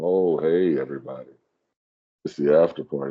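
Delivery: drawn-out, unhurried, slow and deep voice. Opening the after party segment, in a slower, deeper voice. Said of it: "My voice getting a little deeper".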